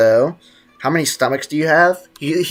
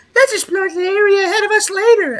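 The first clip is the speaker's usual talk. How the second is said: very high, pitched-up little companion sidekick voice. Copying a game character's line: Paimon impression. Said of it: "Does that sound like a good Paimon impression?".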